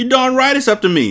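very high, booming, roaring bellow. The headmistress retorts to a woman who has just deferred to her, bellowing. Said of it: "Miss Trunchbull bellowed".

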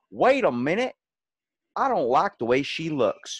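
put-on Southern accent. Acting out a reader praising a book: Southern accent. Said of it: "I'm just gonna give him a Southern accent".

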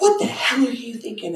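put-on angry fatherly voice, high, furious outburst. Retelling how the dad burst into the room: imitating an angry dad. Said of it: "pissed off as hell at me".

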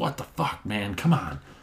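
mock angry, exasperated, pissed-off tone. Speaker retells a golfer's reaction after his driver smashed on the cart path, retelling a pissed-off outburst. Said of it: "He's all pissed off".

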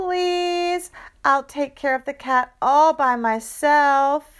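earnest, high pleading. A daughter asks her mom to let her get a cat, pleading. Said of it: "she pleaded".

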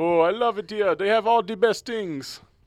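very high, cartoon-style Jamaican accent. Telling a joke, voicing the Jamaican man's punchline in a cartoonish Jamaican accent. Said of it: "you sounded like a guy from Cartoon Network".

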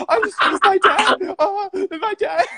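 very high, loud fake sobbing. Joking about Jesus pulled over by police, the speaker does mock crying like Rittenhouse. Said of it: "He'd be crying like Rittenhouse on the stand".

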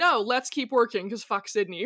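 ordinary delivery

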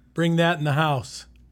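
loud calling out.

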